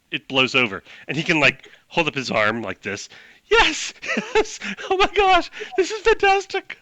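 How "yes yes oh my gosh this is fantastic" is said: very high-pitched, ecstatic, overjoyed orc voice. Describing a scene, the speaker voices the orc, acting out an orc's pure joy. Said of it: "pure joy from the orc".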